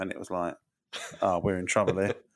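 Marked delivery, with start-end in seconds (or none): none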